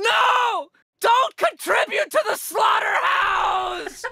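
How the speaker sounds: shrill, creaky, high, drawn-out rasping scream. Retelling how a lady ran up behind a man ordering a hamburger: retelling a lady screaming. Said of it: "she's screaming".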